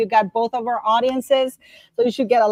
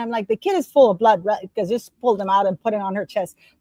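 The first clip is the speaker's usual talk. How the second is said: usual speaking voice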